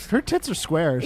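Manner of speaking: ordinary talk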